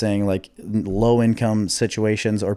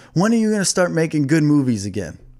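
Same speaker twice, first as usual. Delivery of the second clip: play-acted, high-pitched, demanding shouted yell; 6 semitones higher than usual. Retelling a man's story of a woman at his car window; retelling a woman's yell. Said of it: "and she yelled".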